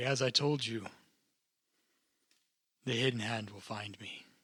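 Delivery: normal talking voice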